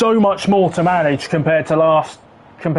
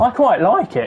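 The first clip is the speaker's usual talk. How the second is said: breaking, cracking voice; 5 semitones higher than usual. Commenting on the Audi while watching the laps, voice cracking. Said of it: "Voice crack".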